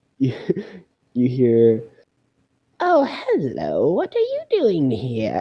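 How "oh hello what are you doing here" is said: put-on elderly woman voice, high and swooping. Narrating a game, voicing someone heard behind the player's character, old lady voice. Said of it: "sounds like an old lady".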